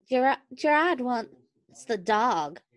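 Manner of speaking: high female voice. Reading a story aloud, voicing the woman's line in a woman's voice. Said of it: "I have to come up with a woman's voice".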